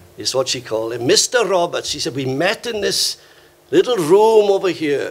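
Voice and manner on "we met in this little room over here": put-on thick, broad, heavy Welsh accent. Quoting what Miss Hughes said back in 1974, in her heavy Welsh accent. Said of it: "a very heavy Welsh accent like that".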